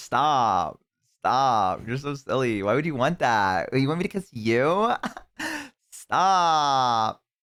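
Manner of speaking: put-on coquettish voice, slow, coy and teasing. Acting out a hair-twirling character for a laugh: put-on flirty character voice. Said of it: "I embraced the character a little bit too hard".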